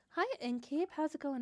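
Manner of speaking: all politeness, customer service voice. Greeting the innkeeper: customer service voice. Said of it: "you may hear me go slip into my customer service voice".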